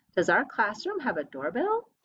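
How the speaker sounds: rising tune at the end on doorbell. Teacher reading a sentence aloud with first graders, rising question intonation. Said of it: "change your voice towards the end".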